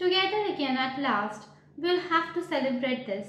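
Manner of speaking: ordinary delivery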